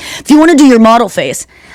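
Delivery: put-on male voiceover narrator voice. Imitate the annoying voice usually heard on TikToks for podcast listeners, in the TikTok guy's voice. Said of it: "usually a guy's voice being like".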